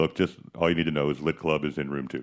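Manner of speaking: very low, dead-level, flat monotone drone. Retelling how he snatched the phone away and spoke, imitating his monotone voice. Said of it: "his monotone voice".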